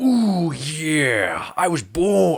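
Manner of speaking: "yeah" very slow, high, and drawn out. Imagining Bane spoken in another voice: Macho Man Randy Savage voice. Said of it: "how Macho Man Randy Savage would sound as that version of Bane".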